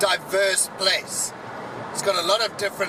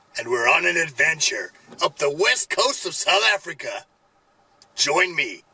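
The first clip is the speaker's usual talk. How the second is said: put-on American accent; 3 semitones lower, 3 dB louder than usual. Vlogger opening a South Africa trip video for an American audience: put-on American accent. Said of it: "Good accent? Bad accent? Thought I'd be more inclusive to my enormous American audience".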